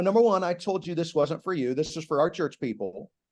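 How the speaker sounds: ordinary delivery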